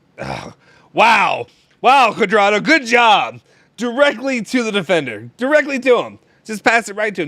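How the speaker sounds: high, loud screaming and yelling outburst. Reacting to a pass straight to the defender: screaming and yelling. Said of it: "I'm screaming and yelling".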